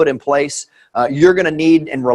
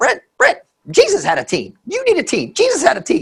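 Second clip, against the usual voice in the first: very high, bouncing, swooping energetic sing-song; 14 semitones higher than usual. Quoting a man's saying that Jesus had a team, Terry Watson impersonation. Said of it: "my best Terry uh, Watson impersonation".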